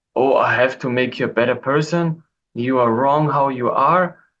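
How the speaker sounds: usual speaking voice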